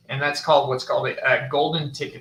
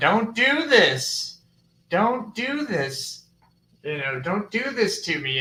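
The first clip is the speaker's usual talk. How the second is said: put-on, high, drawn-out, top-of-the-lungs screaming; 7 semitones higher than usual. Retelling what Jeremy screamed while pointing out where he stood: imitating Jeremy screaming. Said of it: "Jeremy was screaming at the top of his lungs".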